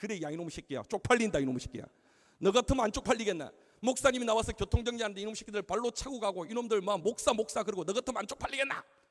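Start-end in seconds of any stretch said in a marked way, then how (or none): none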